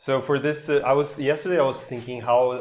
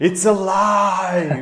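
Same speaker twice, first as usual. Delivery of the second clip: mock long, high, loud, triumphant drawn-out scream; 6 semitones higher, 5 dB louder than usual. Retelling a movie scene where the doctor creates the monster: imitating a scream. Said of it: "and at the end he screams".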